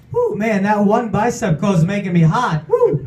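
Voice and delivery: showy, boastful, swooping show-off gym-guy voice. Giving gym advice, then doing an impression of the six-pack guy in the weight room. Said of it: "here's my impression of the guy with the six-pack".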